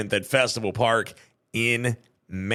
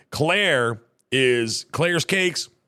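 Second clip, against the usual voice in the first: plain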